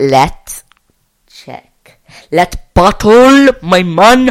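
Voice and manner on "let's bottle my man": very loud, drawn-out Jamaican accent. Doing a personality quiz, the speaker says this in a jamaican phone-scammer accent. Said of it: "Why do I sound like a Jamaican phone scammer there?".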